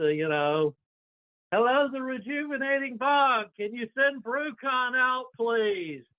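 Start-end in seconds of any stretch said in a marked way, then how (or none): 1.5-6.0 very high, loud, carrying, projecting call. Standing outside, calling for Brucon to be sent out, in a projecting voice. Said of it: "projecting voice".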